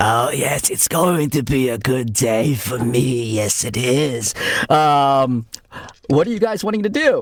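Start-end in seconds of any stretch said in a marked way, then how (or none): 0.0-4.3 slow, drawn-out, hobbling creature voice. Voicing a hobbling creature as it moves towards the group: voicing the hobbling creature. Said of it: "the creature starts, like, kind of, like, hobbling towards you all and going".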